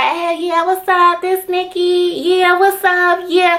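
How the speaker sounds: very high, sugary, cutesy chattering voice. Recalling answering the phone to guys back then, in a high cute phone voice. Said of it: "the higher your voice, the cuter you sound".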